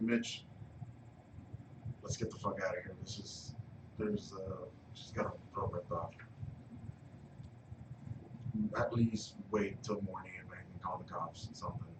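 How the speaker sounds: urgent hushed whisper, barely audible. Whispering to a companion in character after seeing a body: whispering. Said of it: "I'm gonna whisper to Mitch".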